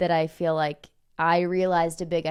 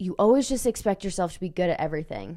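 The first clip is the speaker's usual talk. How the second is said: put-on harsh tone, faster pace. The speaker retells the other person's remark during a bike repair, imitating a harsh tone. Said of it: "You transform my tones every single time".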